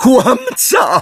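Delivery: high shriek, full of panic. She turns on the boy who broke the prophecy, shrieking in panic. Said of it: "Wrzasnęła i teraz w jej głosie słychać było wyraźnie panikę".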